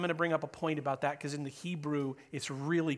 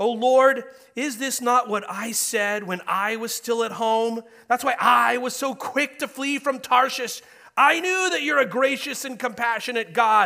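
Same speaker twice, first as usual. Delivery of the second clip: very loud, high, whining, angry complaining tone; 8 semitones higher, 11 dB louder than usual. Speaker addressing an audience acts out a complaint made to the Lord, mock whiny angry voice. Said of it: "Whiny, angry".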